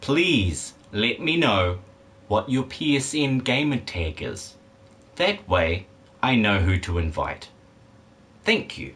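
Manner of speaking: very slow, drawn out, deliberate, word by word. Asking Brody for a gamer tag: speaking very slowly. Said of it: "I'm going to speak very slowly".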